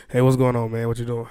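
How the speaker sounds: put-on, mock sultry, seductive voice. Greeting a made-up guy named Rick in a put-on sexy voice. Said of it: "That's a sexy voice".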